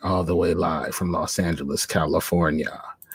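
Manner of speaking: foreboding, menacing, low ominous delivery. The host opens the show's first episode, giving its location, in an ominous tone. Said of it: "That sounded super ominous".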